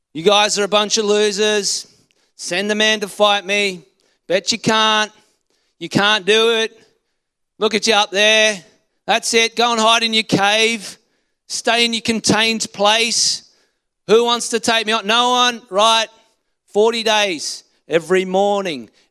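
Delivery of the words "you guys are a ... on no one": put-on taunting giant voice, higher and louder. Retelling how the giant taunted the army each day: acting out Goliath's taunt. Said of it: "Goliath comes out with his taunt".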